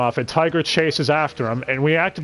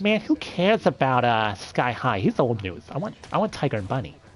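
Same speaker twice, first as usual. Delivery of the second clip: flamboyant lisping voice, quieter; 3 semitones lower, 5 dB quieter than usual. Recapping the next episode, the speaker does a flamboyant Ben Diskin impression. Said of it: "As a very flamboyant Ben Diskin says".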